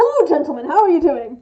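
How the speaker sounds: very loud, very friendly bard voice. Retelling greeting two trolls while playing a bard: retelling a friendly bard's greeting. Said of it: "I was playing a very friendly bard".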